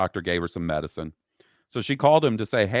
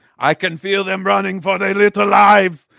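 put-on Austrian accent, very high, loud, rough; 12 semitones higher, 8 dB louder than usual. Repeating a line on request in the Arnold voice: Arnold voice. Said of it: "and of course, in the Arnold voice".

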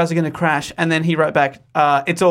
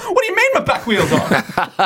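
high, swooping, play-acted panicked voice; 6 semitones higher than usual. Retelling reversing with a wheel off the driveway: imitating own panicked question. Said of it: "and then I started panicking".

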